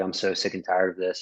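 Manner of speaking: ordinary talk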